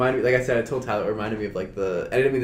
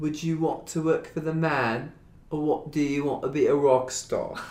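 high-pitched put-on British accent; 6 semitones higher than usual. Asked to do an example of Protozoa, doing Protozoa's British voice. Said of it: "Do an example of Protozoa".

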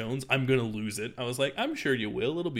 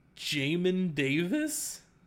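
squeaky voice crack, cracking high; 6 semitones higher than usual. Repeating someone's draft-winner pick back to them, voice cracking. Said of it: "My voice cracked really bad right there".

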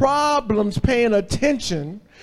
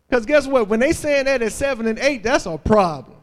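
ordinary delivery

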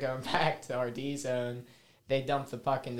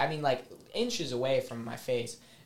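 usual speaking voice

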